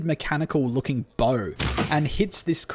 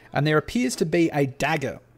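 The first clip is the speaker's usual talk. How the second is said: ordinary delivery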